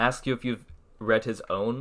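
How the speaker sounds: plain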